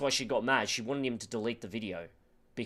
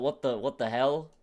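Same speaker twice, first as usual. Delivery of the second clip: put-on baffled, confused disbelief; 2 semitones higher than usual. Retelling a clip where Jake Paul reacts: imitating a baffled reaction. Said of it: "And Jake's just like".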